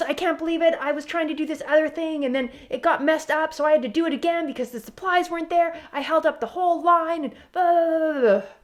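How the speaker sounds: loud angry rant. In a role-play about active listening, an upset worker rants: angry ranting.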